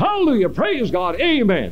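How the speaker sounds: play-acted, very high, swooping, jeering shout. A speaker recalls a passing motorcyclist ridiculing the tent service, retelling a mocking shout. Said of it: "raised his voice and shouted".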